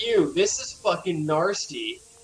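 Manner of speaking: usual speaking voice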